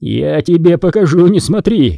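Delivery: slow, held-back, reined-in mild roaring bellow. Di Giorgio keeps roaring at his daughter: roaring. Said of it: "продолжал реветь Ди Джорджо".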